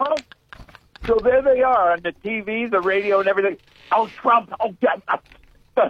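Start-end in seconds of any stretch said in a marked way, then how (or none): 3.9-5.9 very slow, drawn-out whiny tantrum. Mocking how people on the TV and radio react to Trump: mimicking a hissy fit. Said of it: "they're throwing a hissy fit".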